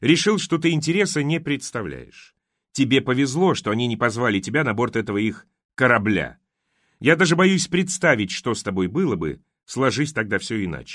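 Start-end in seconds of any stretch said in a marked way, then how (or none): none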